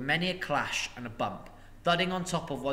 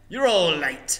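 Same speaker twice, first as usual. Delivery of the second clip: loud, cranky, put-upon, complaining grumble; 3 semitones higher, 8 dB louder than usual. Galleon, just shaken awake, answers the others who laughed at him, grumbling. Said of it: "he grumbled".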